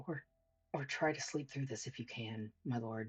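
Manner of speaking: muttering under his breath. A character massaging his lord's throat speaks, muttering under his breath. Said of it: "he just kind of says under his breath".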